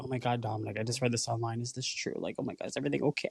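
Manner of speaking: put-on worried, concerned tone. Imitating a friend calling about something read online: worried friend. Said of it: "how a friend would call me".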